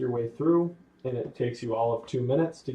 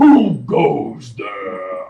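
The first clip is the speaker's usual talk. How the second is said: very loud, resounding, booming, swooping voice; 14 dB louder than usual. Running a scene for players, voicing the voice they hear, in a booming voice. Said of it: "you hear a booming voice".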